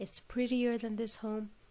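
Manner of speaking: ordinary delivery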